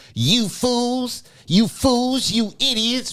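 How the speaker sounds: acted, very high, drawn-out, talking-down condescension. Imitating Roland Martin scolding voters during the elections: imitating Roland Martin's condescending tone. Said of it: "this tone ... in a very condescending manner".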